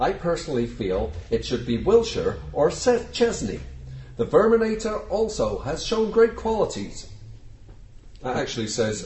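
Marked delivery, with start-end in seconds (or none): 0.0-7.1 really bad fake Canadian accent, pitched high. Reading out a message about the captaincy in a bad Canadian accent. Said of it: "that was a really bad Canadian accent".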